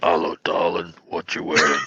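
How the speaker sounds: unsettling put-on voice, low, slow creepy drawl. Retelling how another speaker just sounded: imitating a disturbing voice. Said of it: "It's like kind of going".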